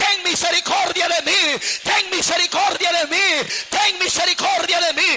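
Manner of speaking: loud, high, desperate shouting.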